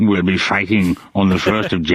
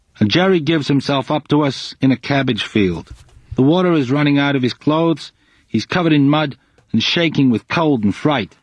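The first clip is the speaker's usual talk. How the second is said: put-on, vague American accent, pitched up; 6 semitones higher than usual. Reading a trooper's diary entry aloud as reported speech, doing an accent. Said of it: "here's [name] doing the accent".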